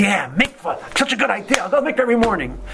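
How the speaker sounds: put-on high, eager young student voice.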